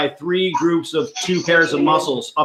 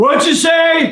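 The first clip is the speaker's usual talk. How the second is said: very high, very loud shouted line, acted out; 13 semitones higher, 5 dB louder than usual. Retelling a man in headphones answering the speaker's question: Maurice's very loud reply. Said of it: "louder than I'd ever heard him".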